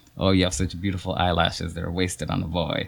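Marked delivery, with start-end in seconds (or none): none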